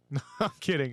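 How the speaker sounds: ordinary talk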